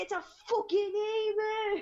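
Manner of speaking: put-on slow drunk man's drawl, emu stretched out. Retelling what a drunk guy walking his emu shouted: imitating a drunk guy. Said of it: "He was just like".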